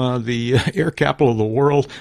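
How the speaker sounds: amused, chuckling through the words. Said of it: "sorry, I shouldn't laugh when I say that".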